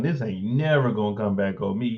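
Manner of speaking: ordinary talk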